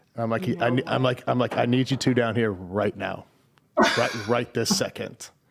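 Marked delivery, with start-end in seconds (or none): 1.5-5.2 put-on harsh, angry tone. Retelling calling hidden kids down from a tree house: retelling an angry order. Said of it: "I'm sure I didn't say that nicely".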